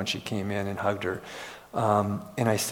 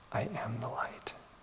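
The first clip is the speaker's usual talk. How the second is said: very hushed, soft and humble delivery; 12 dB quieter than usual. Retelling how a workshop participant finally spoke: imitating a soft, humble voice. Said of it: "She very softly and humbly said".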